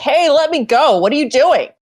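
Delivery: high-pitched crying out. A tabletop player voices their character struggling to break free: screaming. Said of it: "I was screaming like".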